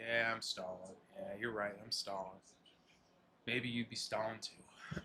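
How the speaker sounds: very quiet half-whisper under the breath. Describing a tired old player in a baseball movie, retelling him half-whispering to himself. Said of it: "he just whispers to himself".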